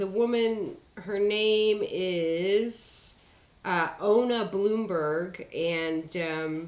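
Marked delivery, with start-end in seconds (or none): none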